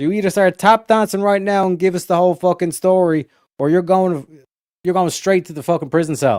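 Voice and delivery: acted tough-guy manner. Showing how to play bad cop with a suspect: playing bad cop. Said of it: "doing the whole, like, bad cop thing".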